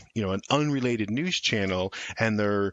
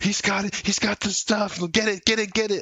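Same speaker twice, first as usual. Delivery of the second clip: acted out, very high, frantic, manic panic; 11 semitones higher than usual. Acting out crazed attackers spotting a logo: panicked manic frenzy. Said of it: "they panic and go manic".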